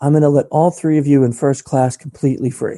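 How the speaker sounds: mock whisper, imitated and hushed. Retelling what a woman said to a wife: imitating a whisper. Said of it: "she whispers to my wife".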